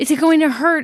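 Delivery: put-on frightened, high, panicky voice. Retelling a shot at the doctor's office: imitating someone panicking. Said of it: "panicking and said".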